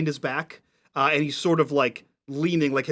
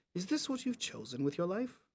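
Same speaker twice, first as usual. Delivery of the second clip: very quiet words, spoken close at the ear; 4 semitones higher, 14 dB quieter than usual. Voicing a character who hugs a player and speaks in her ear: speaking quietly in your ear. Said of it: "quietly in your ear you hear".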